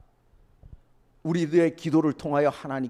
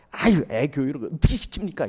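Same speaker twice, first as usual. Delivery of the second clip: reproachful, scolding voice, louder. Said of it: "이러고 막 삿대질해요".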